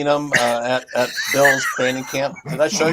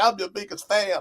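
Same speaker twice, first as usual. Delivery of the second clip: fake country hillbilly accent, pitched up; 6 semitones higher, 6 dB quieter than usual. Retelling a video where someone poses as a fan: imitating a put-on hillbilly accent. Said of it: "he did that kinda hillbilly accent".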